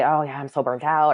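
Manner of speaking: ordinary talk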